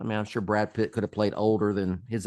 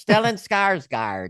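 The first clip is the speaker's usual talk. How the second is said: put-on Minnesota accent, very high; 10 semitones higher, 7 dB louder than usual. Repeating a name over and over, now saying it in a minnesota accent. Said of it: "Feel like I want to say it in Minnesota accent".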